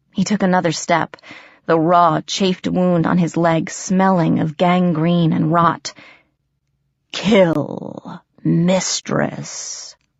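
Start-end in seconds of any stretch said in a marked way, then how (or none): 7.1-10.0 rumbling, growling ogre voice. Narrator reading a story, giving an ogre's line, growling. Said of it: "he growled".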